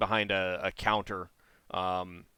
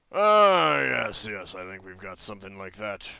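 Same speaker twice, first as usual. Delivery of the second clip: loud, deep, rumbling creature voice; 8 dB louder than usual. A minotaur asked for purge tips answers the adventurer in a deep rumbly minotaur voice. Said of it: "in a kind of a deep, rumbly voice".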